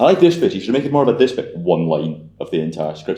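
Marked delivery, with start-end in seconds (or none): 0.0-1.6 put-on loud, belted-out, angry Irish accent. Retelling what a film class tutor first said about a script: angry Irishman voice. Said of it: "Angry Irishman".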